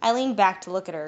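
plain reading voice

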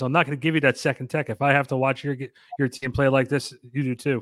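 plain

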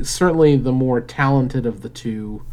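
ordinary talk

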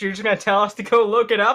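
plain

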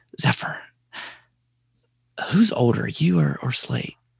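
hushed, leaned-in whisper. The speaker acts out a man leaning in to question the speaker's oldest son, retelling a leaned-in whisper. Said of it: "leans in and kind of whispers".

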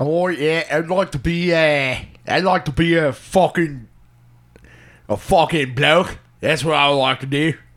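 put-on English accent. Speaker tells another speaker what they would like to be, fake english accent. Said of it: "I think you're doing an English accent".

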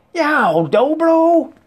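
very high, loud, pained yell. Reading a story, a character whose bare foot is stepped on, yelling. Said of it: "Theto yelled".

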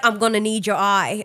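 attempted British accent. Recapping a scene with an eye sensor, attempting a British accent. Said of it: "I can't do a British accent".

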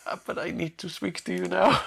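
sheepish, hesitant tone. Retelling a scene, imitating Borgman asking the prince to talk: shamed voice. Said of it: "almost a shamed voice".

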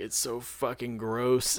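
put-on crying, mock tearful complaining tone. Retelling how she complained about a drink she had to finish, imitating someone crying. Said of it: "like crying".

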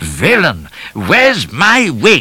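outraged bellowing shout, high and drawn-out. A man on catching sight of the other man: shouted. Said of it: "he shouted".

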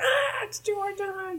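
put-on, very high, very slow, drawn-out falling scream. Recapping a comic where Princess Zelda falls from a tower: screaming as Princess Zelda. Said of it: "she's screaming".

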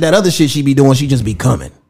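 plain

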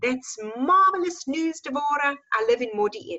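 put-on speaking with Afrikaans accent. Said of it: "strong, um, um, Afrikaans accent".

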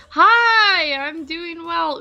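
high yell, stretched out very slowly. A guest answers the host's greeting at the start of the show, yelling. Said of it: "I kind of yelled at you".

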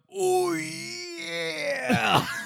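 put-on high cry, Japanese accent, "yeah" stretched. Recapping the ending scene, Bart's Japanese-accented cry. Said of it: "In a non-dubbed Japanese line".

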